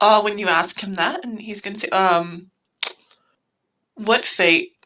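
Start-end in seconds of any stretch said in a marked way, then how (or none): 3.9-4.7 long pause before what fate. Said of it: "And he's going to pause".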